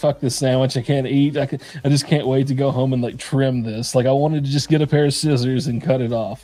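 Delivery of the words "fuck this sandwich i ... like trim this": plain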